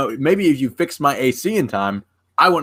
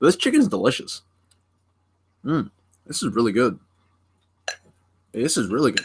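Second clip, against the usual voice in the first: smacking lips, eating while talking; 3 dB quieter than usual. Talking to the stream while eating chicken, smacking lips while eating. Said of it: "I'm probably smacking my lips on the stream".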